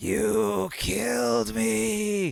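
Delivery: strangled rasp, "me" drawn out. Narrating a game, voicing her character's line: strangled raspy mumble. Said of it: "kind of like raspy, crushed throat, she mumbles".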